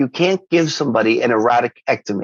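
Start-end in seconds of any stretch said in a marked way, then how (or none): none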